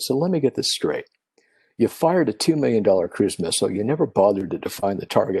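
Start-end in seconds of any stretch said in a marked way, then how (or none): none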